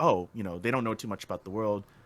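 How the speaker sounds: ordinary delivery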